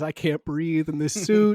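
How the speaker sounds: put-on crying. Retelling an audition where the actor started crying: imitating someone crying. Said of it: "He starts crying".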